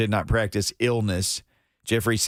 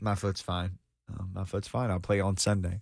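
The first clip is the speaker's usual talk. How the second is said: deadpan, quieter delivery; 7 dB quieter than usual. Imitating Derrick Henry saying his foot is fine: deadpan Derrick Henry impression. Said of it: "he was so deadpan".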